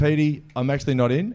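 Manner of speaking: ordinary talk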